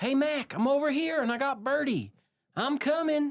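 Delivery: yelling out, pitched very high. A player's character in a tabletop game calls out to a friend, yelling out. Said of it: "I'm gonna yell out and say".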